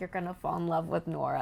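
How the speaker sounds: normal talking voice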